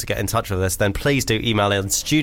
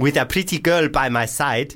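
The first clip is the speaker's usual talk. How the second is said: South African accent, pitched a bit higher. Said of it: "is this going full African".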